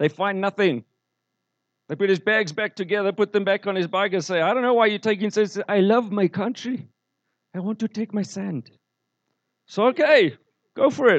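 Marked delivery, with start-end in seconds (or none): 4.4-8.7 put-on accent from Zimbabwe. Retelling a story about a bag search, quoting the people involved, in an imperfect Zimbabwean accent. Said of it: "my Zimbabwean accent can do better".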